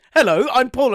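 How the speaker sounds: loud put-on podcast host intro voice. Asked whether to do the intro, the speaker jokingly puts on a podcast voice. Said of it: "I'm doing my podcast voice".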